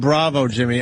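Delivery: ordinary delivery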